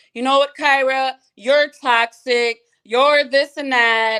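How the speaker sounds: frantic, spazzing, high, angry yell. Retelling a family argument, quoting the mother: imitating mom yelling. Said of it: "She started yelling".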